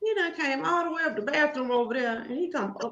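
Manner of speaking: high, soft, put-on puzzled voice.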